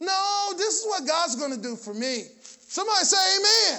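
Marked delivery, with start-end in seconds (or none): none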